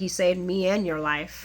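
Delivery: ordinary delivery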